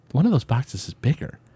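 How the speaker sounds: high, hushed, secretive whisper. Retelling a friend's quiet warning about a present box: imitating someone whispering. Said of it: "whispered to me and he was like".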